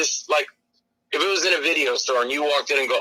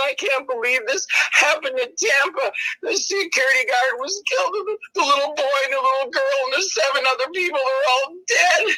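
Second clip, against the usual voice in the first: put-on sobbing through the words, very high pitched; 10 semitones higher than usual. Retelling what a crying lady at the theater said: imitating a crying woman. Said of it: "and she's crying".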